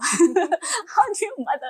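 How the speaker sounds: high-pitched, slow, laughing, pleading tone.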